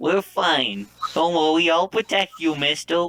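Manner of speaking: put-on high, proud little boy voice.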